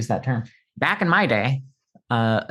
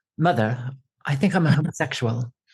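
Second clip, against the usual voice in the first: put-on, slight British accent throughout. Imitating a male child coming out to his mother: slightly British accent. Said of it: "With a slightly British accent?".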